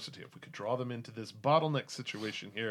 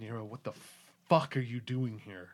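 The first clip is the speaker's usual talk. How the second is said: angry, pissed-off character voice. Voicing a character who looks up with a pissed off face: angry character voice. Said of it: "with a pretty pissed off face".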